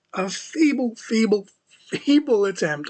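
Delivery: "feeble" stressed hard and high each time. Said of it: "I cannot stress that enough".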